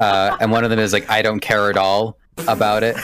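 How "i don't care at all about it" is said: ordinary delivery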